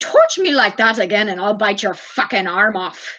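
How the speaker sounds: put-on speaking in an Irish accent. Retelling the baby's angry reply: Seamus in an Irish accent. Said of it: "Irish accents are funny".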